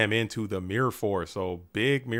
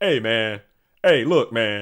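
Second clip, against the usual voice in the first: booming, slow seventies cop voice; 8 dB louder than usual. Showing the voice he uses whenever he's sharking, seventies beat cop voice from Shaft. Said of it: "seventies beat cop from like a from Shaft".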